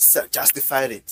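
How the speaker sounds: usual speaking voice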